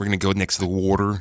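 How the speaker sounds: odd Pennsylvania accent vowel in water. Discussing regional accents and how they say water: imitated Pennsylvania accent. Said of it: "there's that weird Pennsylvania accent where they say water".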